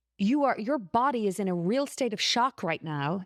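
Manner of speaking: put-on angry voice. Retelling what a doctor said in the hospital: imitating an angry doctor. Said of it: "he was angry".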